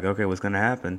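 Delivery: ordinary talk, nothing marked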